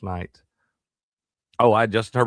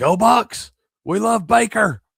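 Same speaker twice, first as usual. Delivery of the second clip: high, loud yelling. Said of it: "just yelling".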